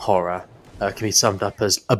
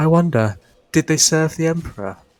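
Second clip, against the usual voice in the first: earnest, merry put-on voice, higher pitch; 8 semitones higher than usual. Retelling a film scene where an actor wonders about his parents: earnest Dominic Monaghan voice. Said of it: "the merry voice, very earnestly just going".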